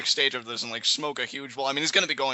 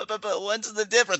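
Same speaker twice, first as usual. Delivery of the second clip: put-on little kid voice, higher; 7 semitones higher than usual. Repeating a question about wrestling match types, in a little kid voice. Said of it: "in like a little kid voice".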